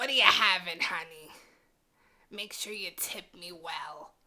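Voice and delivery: put-on worn-out, raspy old voice. Describing older waitresses taking an order, imitating a smoker's voice. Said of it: "they talk like they've been smoking since they were like four years old".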